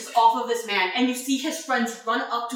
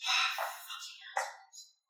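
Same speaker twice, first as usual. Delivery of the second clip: barely audible, very quiet whispered mutter. Game master voices a character reacting to the party: muttering under her breath. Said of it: "you hear her mutter under her breath".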